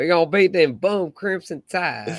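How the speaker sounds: loud, high-pitched, hollered put-on country Cajun accent. Asked to say a line in your best imitation, put on a Brian Kelly accent. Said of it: "in your best Brian Kelly accent".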